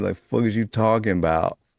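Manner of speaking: full-on, put-on New York accent. Quoting how some people talk, imitating a new york accent. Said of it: "you sound straight up from New York".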